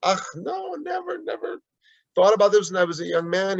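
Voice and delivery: put-on German accent. Retelling a grandfather's answer to his grandchild's question, in a thick german accent. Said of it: "in his thick German accent".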